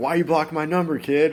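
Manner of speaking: put-on Boston accent. Retelling what a caller said on the phone: imitating a thick Boston accent. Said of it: "he has this thick Boston accent".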